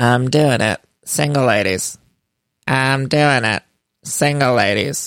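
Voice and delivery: slow, flat, dead-level deadpan drone. Imitating a cast member's confessional empowerment moment: imitating Erica's monotone. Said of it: "very Erica monotone".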